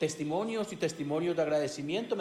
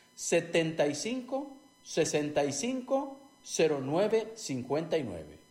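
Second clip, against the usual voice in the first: repeated more slowly. Advertiser repeating the only phone number for listeners, more slowly. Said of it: "Lo repito más despacio".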